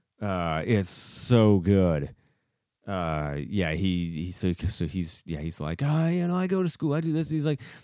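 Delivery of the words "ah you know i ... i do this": faked high childlike voice. Retelling how a gamer pretended to be a kid: imitating someone faking a kid voice. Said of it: "he's really good at pretending that he's a kid".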